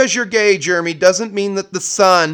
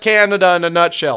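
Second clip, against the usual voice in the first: ordinary talk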